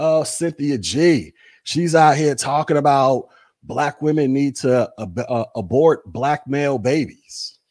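ordinary talk

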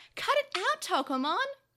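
high, loud cry. He stops his Digimon from biting another: cried out. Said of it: "Akira cried out".

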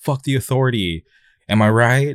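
acted-out, overjoyed, high, drawn-out yell. Retelling how a random guy grabbed the speaker; retelling a stranger's yell. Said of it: "he just yelled like".

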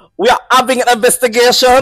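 loud, high-pitched put-on announcer accent. Retelling a lady's announcement during an alarm, a speaker uses a put-on accent. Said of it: "can I use the accent?".

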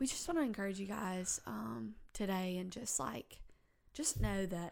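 put-on preachy voice, encouraging sermon-style cadence. Podcast host puts on a voice to encourage listeners: put-on preachy voice. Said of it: "put on my, like, my preachy voice".

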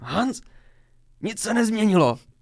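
very loud, high, all-out holler. Recounting climbing out of a manhole and yelling at people, retelling own shout. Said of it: "zařval jsem".

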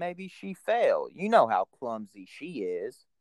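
dry, mocking, insincere sarcastic tone. Retelling a scene where a character answers sarcastically: imitating a sarcastic remark. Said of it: "two was being sarcastic".

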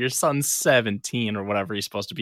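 plain

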